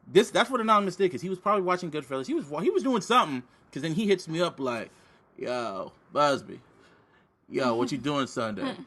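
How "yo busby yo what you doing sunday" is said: unhurried, friendly, slow, drawn-out delivery. Retelling how he got a message, impression of Anonymous. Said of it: "That's my impression of him".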